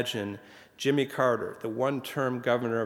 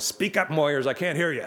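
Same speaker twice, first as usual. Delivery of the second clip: imitated bellowing, pitched much higher than normal; 4 semitones higher than usual. Tell how Johnson interrupted Moyers's prayer from across the dinner table, retelling a bellow.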